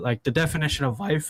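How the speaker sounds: voice cracking and breaking mid-line. Speaker reflecting aloud to listeners, voice cracking. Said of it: "Sorry, voice crack".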